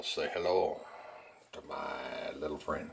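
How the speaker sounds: put-on poor Irish accent, low. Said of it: "I can't do an Irish accent".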